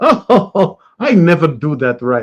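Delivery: terrible put-on Indian accent, loud and slow. Retelling a married man's reply to a teasing question, doing a terrible Indian accent. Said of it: "I'm doing a terrible accent".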